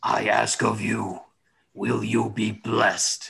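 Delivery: eerie, itchy, creepy and unsettling tone. Voicing a shadowy creature that speaks to a player: eerie itchy tone. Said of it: "it says to you in that wonderful itchy tone".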